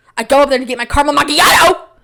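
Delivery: exasperated emphatic. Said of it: "I'm talking so fast".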